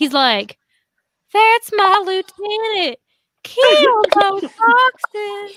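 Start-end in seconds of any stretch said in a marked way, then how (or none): 1.3-5.6 put-on slow, drawn-out, high, loud old-man voice. Joking that Tyler Hill sounds like an old man, doing a Tyler Hill old-man voice. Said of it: "does sound like that old man".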